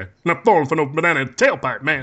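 in an angry tone. Showing another speaker how the line should be delivered, say it angry. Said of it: "you got to say that like you're angry".

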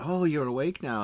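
mock old woman whispering. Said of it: "So she leans over and says".

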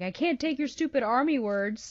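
uncomfortable, frustrated, high-pitched blurted outburst. Discussing a scene, acting out a character's yell. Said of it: "At one point he yells like".

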